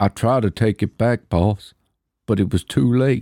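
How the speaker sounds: put-on Western-style Southern accent. Performing a film line for a guessing game, in a southern film accent. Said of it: "Fucking sounds like a Western".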